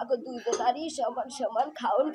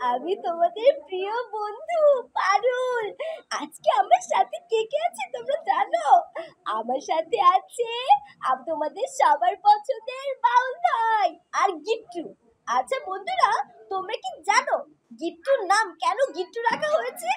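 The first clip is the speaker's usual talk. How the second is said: put-on cartoon girl voice, much higher pitch; 10 semitones higher, 5 dB louder than usual. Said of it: "আমি dubbing করতে পারি বা হচ্ছে mimicry করতে পারি।".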